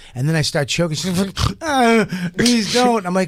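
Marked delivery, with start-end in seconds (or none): 1.7-3.1 play-acted crying, high and tearful. Recounting an encounter to friends, acting out what she said, imitating someone crying. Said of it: "she'd start crying".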